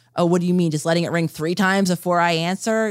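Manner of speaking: usual speaking voice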